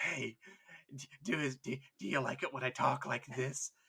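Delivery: soft breathy whispering. Imagining a Carcharodon talking to the others, in a breathy whisper. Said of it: "You want me to breathily whisper in your ear?".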